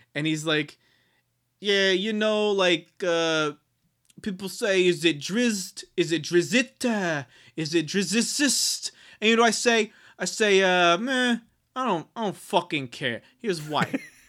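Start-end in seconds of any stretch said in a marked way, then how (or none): 1.6-14.0 put-on New Jersey accent, pitched higher. Retelling an author's interview about pronouncing Drizzt: imitating R. A. Salvatore's New Jersey accent. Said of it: "somewhere in that area, uh, accent".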